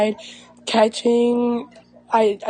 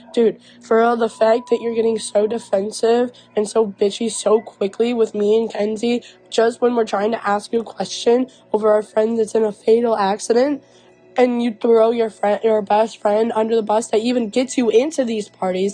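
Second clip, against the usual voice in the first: ordinary talk, nothing marked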